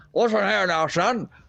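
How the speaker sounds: put-on British police accent. You're retelling how an officer grabbed James by the shirt and shook him, imitating a British police officer. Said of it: "British police style".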